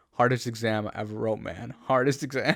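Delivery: ordinary talk, nothing marked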